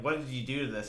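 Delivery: ordinary talk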